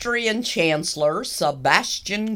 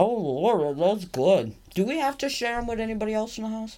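words muffled, spoken through a mouthful of food; 3 semitones higher, 3 dB quieter than usual. Eating carrot cake treats in the house, talking with mouth full. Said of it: "Could you stop talking with your mouth full?".

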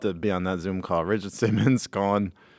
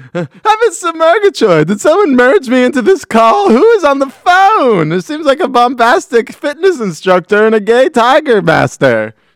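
very high, booming, swooping big voice; 12 dB louder than usual. Joining a phone call in a skit: Snagglepuss voice. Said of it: "Snaggle put some other guy on the line".

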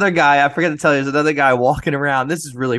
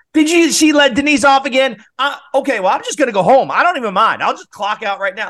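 mock yelling, high, raised and room-filling; 10 semitones higher than usual. Retelling how she yelled in front of the whole lobby, retelling a yell. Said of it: "She's like yelling".

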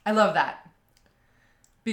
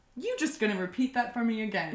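plain

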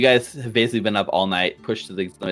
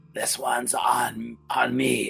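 raspy character voice; 4 semitones higher, 4 dB quieter than usual. A man calls out across the bar to the group, in a raspy Shoma voice. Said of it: "it's kind of a raspy voice".

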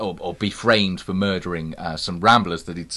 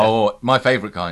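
normal talking voice

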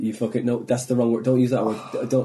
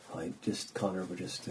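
hushed, very soft, low manager voice; 5 semitones lower, 15 dB quieter than usual. Imitating how managers talk: low-volume management talk. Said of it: "that low volume management, uh, talk".

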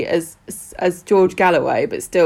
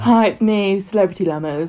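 put-on posh accent; 2 semitones higher than usual. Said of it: "if you've got a posh voice".

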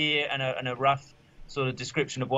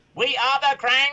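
very high, loud, robotic-sounding delivery; 11 semitones higher, 5 dB louder than usual. Showing the voice worked out for Krang: Krang voice sounding like a Dalek. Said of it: "that voice sort of almost ended up sounding quite like a Dalek".

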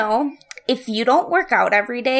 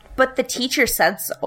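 mock expressionless, flat, matter-of-fact deadpan. Retelling what she answered about the gym teacher, imitating a deadpan reply. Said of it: "Like, deadpanned".

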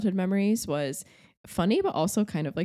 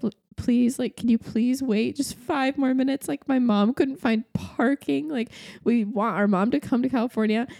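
tearful pleading voice, higher; 7 semitones higher than usual. Retelling a plea to a gate agent to wait: imitating own past crying plea. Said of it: "I start crying. I'm like".

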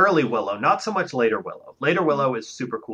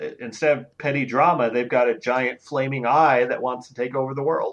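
ordinary delivery

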